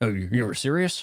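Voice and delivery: scoffing newspaper-editor voice. Cut to J. Jonah Jameson laughing at the decision he hears, as an off-the-cuff J. Jonah Jameson impression. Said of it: "not a half bad impression of him".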